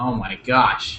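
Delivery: ordinary delivery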